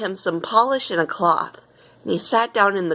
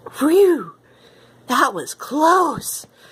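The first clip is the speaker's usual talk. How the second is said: breathless gasp, out of breath, pitched up; 7 semitones higher, 4 dB louder than usual. Reading a story aloud, the narrator voices a character's line: gasping. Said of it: "gasped Gonzo".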